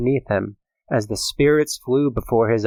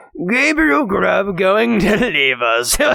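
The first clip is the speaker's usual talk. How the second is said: storybook goblin voice, high and swooping; 9 semitones higher, 4 dB louder than usual. Narrator reading the goblin's reply to the sexton, in a goblin voice. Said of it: "said the goblin".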